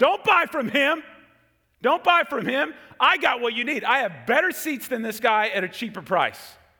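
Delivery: high, loud yelling in a scalper voice.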